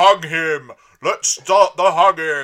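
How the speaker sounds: very loud, drawn-out silly-voiced bellow. Describing a hooded character from an episode, imitating the character shouting. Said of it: "he's like shouting like".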